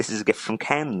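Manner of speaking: ordinary talk, nothing marked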